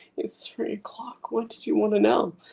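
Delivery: most pathetic, pitiful voice, very high-pitched. Retelling the officer answering a three a.m. phone call, mock-pathetic voice. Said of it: "he has the most pathetic voice".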